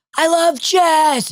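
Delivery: put-on, very high, shrill, loud screamed yell. Speaker retells what the brother-in-law kept doing during a speech, retelling a scream. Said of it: "was screaming".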